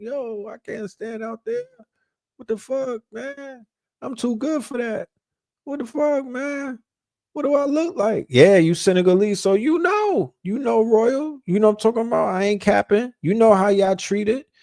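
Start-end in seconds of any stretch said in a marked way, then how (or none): 0.0-8.3 high, soft, tearful, crying, distressed voice. Recalling getting pep talks from people, retelling crying and shaking. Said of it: "I'm literally crying and shaking".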